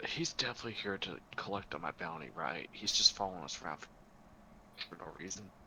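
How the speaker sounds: very quiet whisper in a put-on voice. Whispering to Jacob in character about a stranger following them: whispering in character. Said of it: "I'm gonna whisper this to Jacob".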